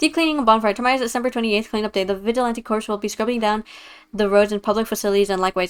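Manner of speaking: loud, rapid-fire, rattled-off fast reading. Showing off by reading an announcement aloud, reading very fast. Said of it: "wanna see me read really fast?".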